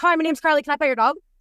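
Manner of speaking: words tumbling out very fast. Recalling running up to dog owners as a child, imitating own rapid speech. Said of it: "Like as fast as humanly possible".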